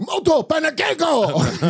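very high-pitched, demanding yell. Retelling a film scene of a man yelling at the pancake cook, yelling like Inherent Vice. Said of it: "He's yelling at the Japanese guy".

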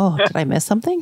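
put-on, serious, solemn-sounding voice. Imitating Matt's reaction to a remark: imitating Matt, suddenly serious. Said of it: "Matt just got so serious when you said that".

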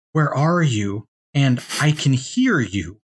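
spooky ghostly woman's voice, calling out. Retelling a game ghost calling out as you walk toward a red glow, ghostly woman voice. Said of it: "this ghostly woman going like".

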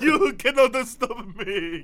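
put-on old-movie vampire count villain voice. Acting a scene of Guy Hero meeting Dracula: Dracula voice. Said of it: "That was my Dracula".

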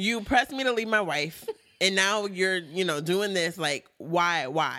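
usual speaking voice

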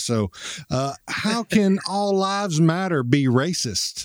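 slow, put-on southern Texas drawl. Asked to put on a voice, reading out a question in a Southern Texas accent. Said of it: "Put on the southern voice that I've got from Texas".

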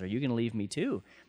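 ordinary delivery

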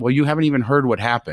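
plain

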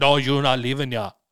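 fake Jamaican-accented voice. Describing a villain and how he talks: put-on jamaican accent. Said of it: "he has like a Jamaican accent because he goes like".

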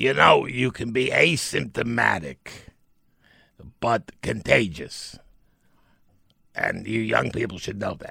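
rough, scratchy, creaky put-on voice. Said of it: "He said".

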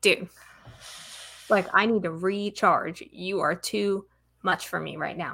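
plain

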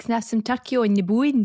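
put-on Scottish accent. Retelling a mum ordering at a deli counter: imitating mum's scottish accent. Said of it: "obviously my mum's Scottish".

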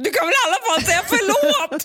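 mock-screaming. Recounting an argument, the speaker acts out their own past words, retelling a scream. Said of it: "Skrek jag".

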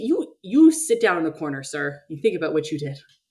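ordinary talk

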